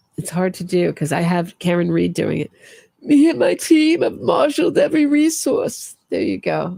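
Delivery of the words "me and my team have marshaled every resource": hysterical put-on voice, pitched way up high. Asked to do a Donna Adelson voice, quoting her: hysterical Donna Adelson voice. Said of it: "say in your Donna Adelson voice ... There's Donna for you ... my hysterical Donna voice".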